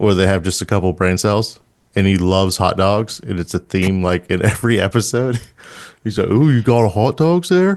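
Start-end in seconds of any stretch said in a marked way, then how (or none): 6.3-7.8 classic dopey, dumb cartoon character voice. Describing a new favorite accent, quoting a dumb cartoon character: dumb cartoon guy accent. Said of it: "my new favorite accent".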